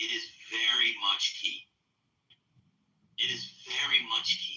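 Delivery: stiff translated-sounding English. Repeating a phrase, sounding like Igor translating Serbian. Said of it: "I sound like Igor translating English to Serbian to English".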